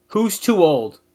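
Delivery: high, loud yell. Repeating what a wrestler yells on screen: imitating Kurt yelling. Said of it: "he yells".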